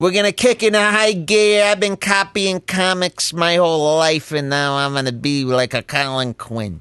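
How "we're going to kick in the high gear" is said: put-on light, pitched-up New York accent. Repeating a line from a video just watched: imitating a New York accent. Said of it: "he got a little bit of that New York accent".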